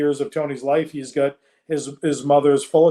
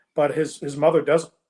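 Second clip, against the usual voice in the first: usual speaking voice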